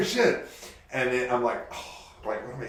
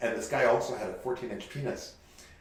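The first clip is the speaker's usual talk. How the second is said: ordinary talk, nothing marked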